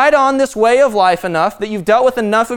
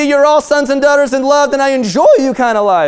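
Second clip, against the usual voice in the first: voice breaking and cracking on the last words; 4 semitones higher, 4 dB louder than usual. Speaking to the listeners, voice cracking at the end. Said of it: "My voice cracked there at the end".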